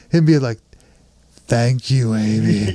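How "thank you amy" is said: very low, dead-level monotone voice. Quoting a movie line from the scene just discussed: monotone Tim Curry imitation. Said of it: "the monotone giant fucking idiot".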